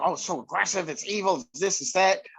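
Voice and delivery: ordinary talk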